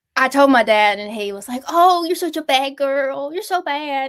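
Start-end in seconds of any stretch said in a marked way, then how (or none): 1.6-4.0 soft, high, fond, affectionate scolding tone. Speaker retelling dad's words to the dog, imitating dad's doting voice. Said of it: "if you say it in that voice".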